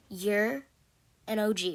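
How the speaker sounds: usual speaking voice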